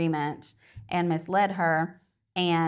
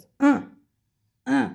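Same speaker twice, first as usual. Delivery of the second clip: high, creaky, rough, wordless monkey grunt; 8 semitones higher, 6 dB louder than usual. Retelling a film scene, imitating a monkey who can't talk. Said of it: "That was a great impression".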